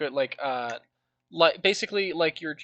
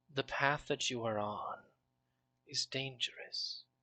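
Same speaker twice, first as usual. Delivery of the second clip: airy, otherworldly whispering voice, quieter; 12 dB quieter than usual. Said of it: "the voice whisper through the wind".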